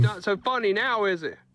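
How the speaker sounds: high, mocking, angry yelling.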